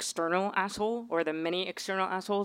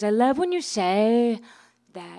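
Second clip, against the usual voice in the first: put-on English accent, higher and slower; 3 semitones higher, 5 dB louder than usual. The speaker retells what a woman in London said to her; imitating her English accent. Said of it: "in her English accent".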